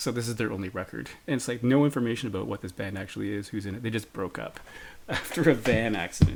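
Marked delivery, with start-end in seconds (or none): 3.8-6.4 words broken up by laughing throughout. Speaker reading a band's bio from Discogs, laughing while talking. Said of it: "I'm sorry I'm laughing".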